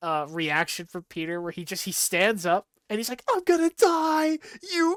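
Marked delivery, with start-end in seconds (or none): 3.3-5.0 shrill, very high, loud screaming. Retelling a character's reaction as he stands up, retelling a scream. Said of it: "he's like screaming at Morbius".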